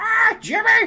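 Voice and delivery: pitched way up, cartoonish. Showing the viewers the teacher from Jimmy Neutron: Jimmy Neutron teacher voice. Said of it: "like that".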